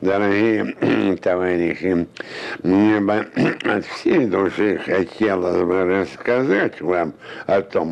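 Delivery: very slow, deliberate, drawn-out, word-by-word speech. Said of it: "Брежнев же говорит медленно. Сейчас покажу".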